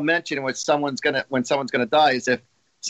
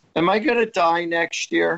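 put-on weepy, tearful, drawn-out pleading through tears; 4 semitones higher than usual. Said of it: "they come to me literally crying".

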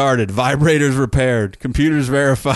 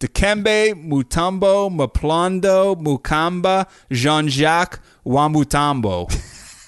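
slow, unhurried delivery; 3 semitones higher than usual. Reading out someone's long full name, usually said fast, slowly. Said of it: "I'll read it slowly".

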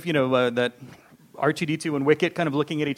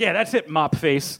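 hammy, badly done movie-gangster tough-guy voice. Retelling a film scene where a gunman threatens Ewoks: imitating a bad gangster voice. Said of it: "bad gangster kind of, uh, kind of voice".

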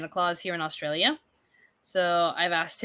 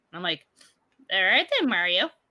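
usual speaking voice

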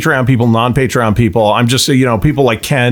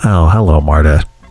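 slasher-film killer character voice; 9 semitones lower than usual. Doing a movie character guessing game with the others: Ghostface voice. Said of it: "do a different movie character every time Marta comes up".

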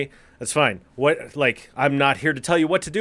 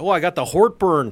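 put-on Midwestern accent, "heartburn" said as "hort-burn"; 3 semitones higher than usual. Joking about the word agita, saying it like a Midwesterner: put-on Midwestern accent. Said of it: "say it like a Midwesterner".

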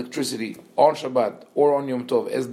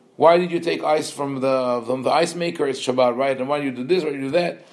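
plain

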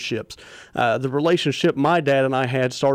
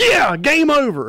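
put-on worked-up whoop, very high cheer; 13 semitones higher, 5 dB louder than usual. Telling a turkey-hunting story, the speaker imitates the shooter's excited shout after the shot. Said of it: "he just kind of jumps up and gets all excited".

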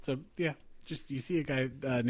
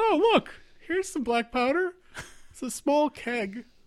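squeaky put-on voice, very high; 5 dB louder than usual. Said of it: "I'm basically the janitor. ... I think I used to be a little squeakier a few minutes ago".

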